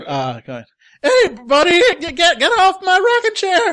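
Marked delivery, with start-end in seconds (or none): 1.0-3.7 very high, loud cracking adolescent voice. Narrating a story and voicing Paul on his rocking chair: cracking teenage voice. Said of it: "the voice that comes out is the cracking voice of a teenager".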